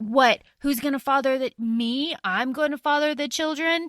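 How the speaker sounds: imitated angry voice. Retelling a book scene where the character is furious: angry, imitating Aedion. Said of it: "he's so angry".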